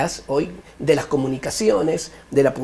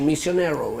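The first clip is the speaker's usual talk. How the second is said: misionero said in Spanish with North American accent. Imitating the missionary who came from the north and spoke a little spanish; north american accent on misionero. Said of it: "hablaba un poquitito así, venía del norte".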